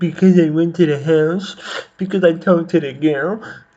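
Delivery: put-on high, loud, childish little-kid voice. Speaker mocking how a man explained why he is here, little-kid voice. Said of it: "he sounds like a fucking little kid".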